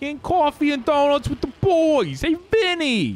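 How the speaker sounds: put-on New York accent. Trying out an accent bit, the speaker chats in a New York accent. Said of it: "It might be a New York accent".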